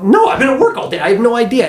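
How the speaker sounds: high-pitched, exasperated, incredulous, disbelieving tone.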